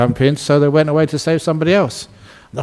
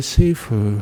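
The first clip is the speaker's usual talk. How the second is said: gentle soft voice, lower and quieter; 7 semitones lower, 4 dB quieter than usual. Retelling a story, voicing Kuan Yin answering the devotee: very soft, kind voice. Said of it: "in a very soft, kind voice".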